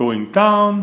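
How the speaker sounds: ordinary delivery, nothing marked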